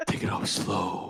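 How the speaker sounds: fake, slow, sultry, sensual late-night radio voice. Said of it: "talk very slow and sensually".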